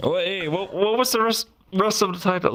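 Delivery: hiccuping while talking. Asking the others about the rest of the title, hiccuping while talking. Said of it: "Sorry, my hiccups".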